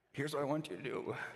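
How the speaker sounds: put-on high elderly man's voice with Yiddish accent.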